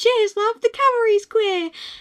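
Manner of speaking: high, loud, cheery British heroine voice. Recording a note to self, dropping into a Tracer impression. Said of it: "That was a Tracer impression".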